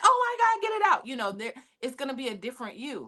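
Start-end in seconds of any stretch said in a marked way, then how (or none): 0.0-1.1 put-on very high, shrill, loud pained shriek. Acting out a patient arriving at a hospital in extreme pain, imitating screaming in pain. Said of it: "you're screaming and yelling".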